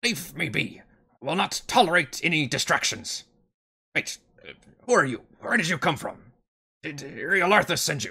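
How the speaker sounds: high-pitched growling voice, clearly spoken. Game master voicing a creature surprised by intruders, growling. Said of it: "and growls".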